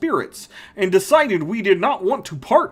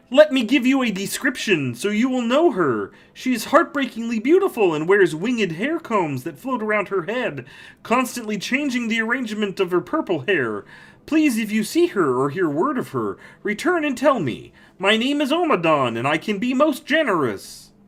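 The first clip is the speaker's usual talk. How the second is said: mixed cartoon martian and frog voice; 3 semitones higher than usual. Voicing a character who asks the listener about a missing woman; Marvin the Martian–Kermit mix. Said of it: "this is like a Marvin the Martian, Kermit D. Frog impression, kind of like mixed together".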